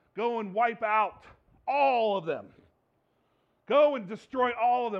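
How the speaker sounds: put-on loud, wrathful, angry god-like voice. Retelling a Bible passage, voicing God: imitating an angry God. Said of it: "we see an angry God again as he tells them".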